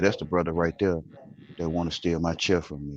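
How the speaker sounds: sidelong, hushed half-whisper, very quiet, barely audible. Retelling what was said to a sister on the sidewalk: imitating a half-whisper. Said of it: "I'm whispering to my sister as I walk".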